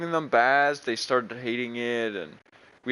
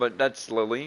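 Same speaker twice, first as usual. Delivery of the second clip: ordinary talk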